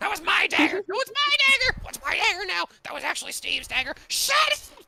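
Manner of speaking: shrieking goblin voices. Voicing goblins squabbling ahead of the party: goblins screaming. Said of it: "the goblins ahead of you screaming in goblin".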